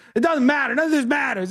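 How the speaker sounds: put-on shrill, very high, angry scream. Retelling a clash at a boarding gate when a passenger screamed; imitating someone screaming. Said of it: "she just starts screaming at me".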